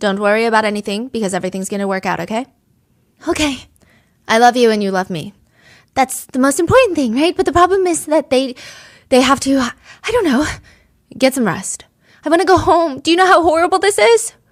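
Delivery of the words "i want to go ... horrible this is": mock desperate, frantic outburst, high and loud. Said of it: "She's frantic".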